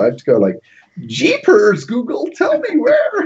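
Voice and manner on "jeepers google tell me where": put-on American accent, very high and swooping. Showing how they must talk so voice recognition understands them, in a fake American accent. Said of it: "I have to put on a fake American accent".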